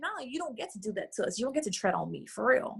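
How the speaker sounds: usual speaking voice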